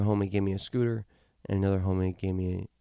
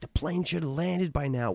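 put-on yelling, higher pitch; 8 semitones higher than usual. Retelling yelling at a flight attendant: imitating his own past yelling. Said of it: "I start yelling at the stewardess".

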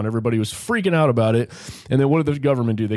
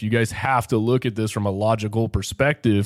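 plain

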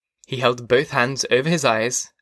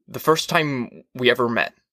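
usual speaking voice

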